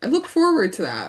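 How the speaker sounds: put-on cheery, happy tone with a sarcastic edge. Retelling a TV scene where Wesley answers a threat: imitating Wesley's sarcastic happy tone. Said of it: "in his little sarcastic, like, happy tone".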